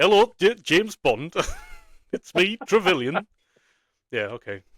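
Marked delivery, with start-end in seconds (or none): 0.0-3.3 put-on slow, loud poor Yorkshire accent. Quoting lines from Sean Bean films, in a crap Sean Bean Yorkshire accent. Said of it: "I'm gonna stop now".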